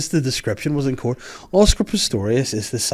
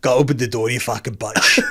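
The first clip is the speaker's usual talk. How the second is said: put-on, mock South African accent. Mimicking how South Africans pronounce a word, in a put-on South African accent. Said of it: "these South Africans".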